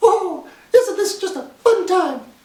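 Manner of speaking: very high little cartoon mouse voice. Doing one character impression after another, you now do a Mickey Mouse impression. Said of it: "now I'm doing the Mickey Mouse impression".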